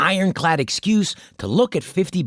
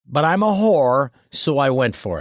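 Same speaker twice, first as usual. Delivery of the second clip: usual speaking voice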